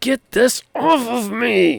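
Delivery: very high, loud, snarling monster voice. Game master voicing a creature that snarls back at the players: snarling creature voice. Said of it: "It snarls back at you".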